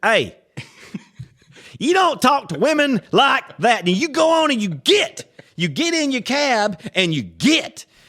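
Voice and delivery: very high, loud, drawn-out angry scolding tone. Retelling how a friend told off a cab driver: imitating an angry telling-off. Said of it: "but I think you're angry".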